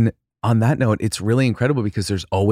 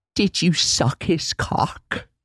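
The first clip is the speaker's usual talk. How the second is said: deliberate, slow, drawn-out dramatic line delivery; 8 semitones higher than usual. Quoting a favorite movie line read: Winona Ryder impression. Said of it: "That was a great impression".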